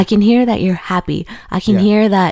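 ordinary delivery

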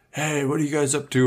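put-on high, random drunk stranger voice.

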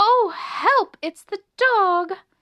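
high, squeaky, frightened little-mouse cry. Reading a story, Melissa cries out as the dog barks in the hall, squeaking. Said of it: "squeaked Melissa".

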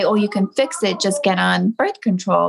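normal talking voice

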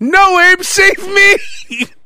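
very high, stretched-out, drawn-out yell. Imagining what the other person would yell while hanging: imitating someone yelling. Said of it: "you'd be yelling".

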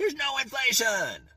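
put-on, very high, shrieked, insistent screaming. Explaining Federal Reserve interest rates, quoting someone's outburst: retelling a scream. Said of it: "started screaming".

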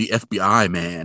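ordinary talk

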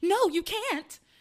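play-acted, upset, high protesting yell. Retelling a story, acting out a woman yelling when he says he's leaving: imitating her yell. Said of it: "she yells".

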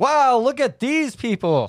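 loud, very high, full-voiced exclamation. In a role-play scene, a character watching students on the grass exclaims, loud voice. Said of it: "And you sound so loud".

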